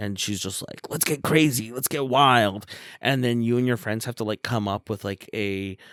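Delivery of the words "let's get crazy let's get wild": put-on wild, party-hungry older woman voice. Describing a rowdy older lady met at a bar: imitating an older lady at a bar. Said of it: "like an older lady you meet at a bar".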